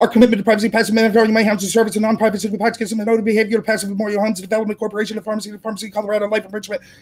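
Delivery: breakneck speed-reading, very fast, barely a breath. A former debater shows how evidence was read in competition; extremely fast speed-reading. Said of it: "it would be something like this".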